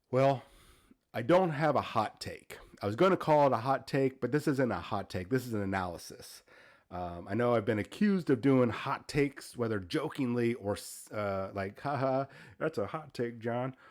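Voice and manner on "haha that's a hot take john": friendly, light teasing, ribbing tone. Speaker recounting how people teased him about his hot takes, mimicking friendly ribbing. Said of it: "little friendly ribbing".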